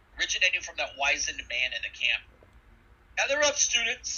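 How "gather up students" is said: very high, firm, solid, carrying call-out. Voicing a wizened teacher calling across the camp: calling out in a very solid voice. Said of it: "he calls out in a very, very solid voice".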